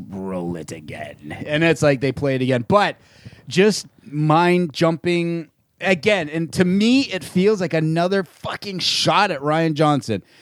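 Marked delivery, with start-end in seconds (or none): 0.1-1.3 very low-pitched and soft. Retelling a stage appearance, the speaker quotes the line in Emperor Palpatine voice. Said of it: "in the Emperor's voice says".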